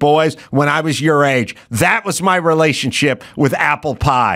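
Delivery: ordinary delivery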